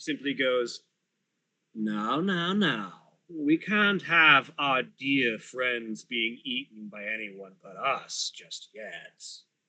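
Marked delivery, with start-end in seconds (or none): 1.7-9.2 different, mysterious voice, quieter than before. A game player voices the mysterious other voice speaking through Ugraine. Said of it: "a very different voice comes out as that familiar, mysterious other voice".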